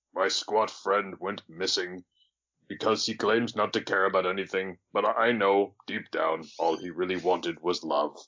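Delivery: hushed, confiding half-whisper with no voice. Voicing a character who confides in a tree, half-whispering. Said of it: "is going to whisper to a tree".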